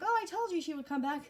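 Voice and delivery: acted, thrilled, eager, excited voice. Retelling a movie scene, the stepmother hearing sleigh bells: imitating an excited stepmother.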